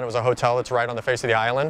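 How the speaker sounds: normal talking voice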